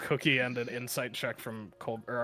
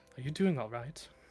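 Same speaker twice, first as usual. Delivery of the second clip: soft, hushed, confidential stage whisper; 4 dB quieter than usual. Describing a woman leaning close to ask how you're doing, retelling a half-whisper. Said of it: "she just whispers".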